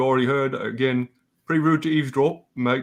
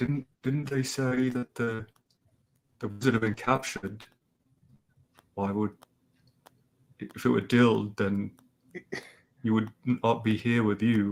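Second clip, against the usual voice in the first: hushed half-whisper, very close to the ear; 2 semitones lower, 5 dB quieter than usual. The speaker voices a raven answering a listener privately, raven half-whispering in your ear. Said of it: "kind of whispers in your ear".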